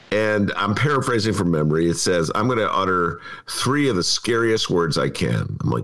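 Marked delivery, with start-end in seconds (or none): none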